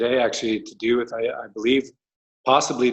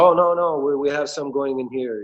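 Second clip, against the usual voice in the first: put-on speaking with Eastern European accent; 3 semitones higher than usual. Retelling a man's reply at a storefront: Eastern European accent. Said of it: "It's like Eastern European accent".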